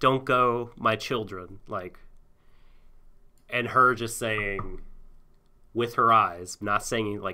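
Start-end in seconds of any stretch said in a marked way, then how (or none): 0.0-1.6 mock pleading voice. Retelling a scene and quoting Isabella: imitating Isabella pleading. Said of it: "And Isabella pleading".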